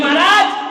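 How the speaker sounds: high, loud, wailing, complaining voice.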